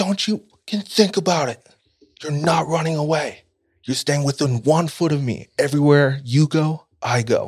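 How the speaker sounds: mock yelled, high-pitched screaming rant. Retelling how one boy came at another, acting out someone screaming. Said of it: "starts screaming at him".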